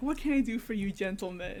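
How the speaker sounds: eager, very kind tone. Retelling Scrooge greeting the visitors: imitating kind Scrooge. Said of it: "Very kind".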